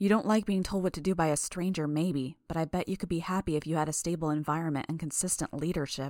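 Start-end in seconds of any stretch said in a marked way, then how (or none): none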